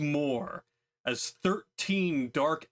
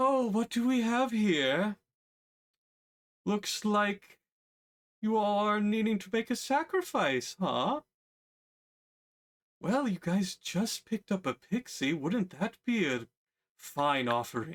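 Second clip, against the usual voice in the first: very sultry, seductive, pitched up; 6 semitones higher than usual. The narrator voices a voice the players hear in their heads: very sultry voice. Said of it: "it's a very sultry voice".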